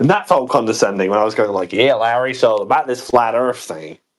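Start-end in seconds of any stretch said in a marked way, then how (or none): 1.7-3.9 best-attempt put-on American accent. Recounting talking to larry, speaking in an american accent. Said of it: "I started to speak in an American accent".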